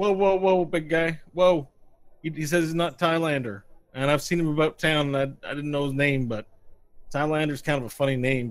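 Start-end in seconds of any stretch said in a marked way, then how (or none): 0.0-1.7 loud, high, calming sheriff voice. Voicing the sheriff calming the Cyclops: sheriff voice. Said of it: "Sheriff says".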